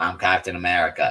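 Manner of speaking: put-on Boston-accented speech. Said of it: "Chris Evans really has one now".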